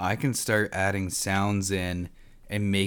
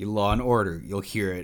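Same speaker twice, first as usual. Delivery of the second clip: ordinary delivery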